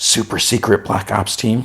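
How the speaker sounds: hushed, secretive stage whisper. Retelling a scene where a character asks about a secret team: imitating a whisper. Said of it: "and she, like, whispers".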